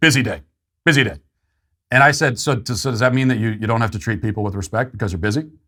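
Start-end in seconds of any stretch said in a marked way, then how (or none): 0.0-1.2 gruff, dismissive brush-off. Retelling a TSA agent's answer as he walked through: imitating a gruff reply. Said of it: "And she said gruffly".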